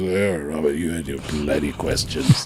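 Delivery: put-on big baritone voice. Retelling what Trevor Phillips said after an interview: imitating a big baritone voice. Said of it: "with this very big baritone voice".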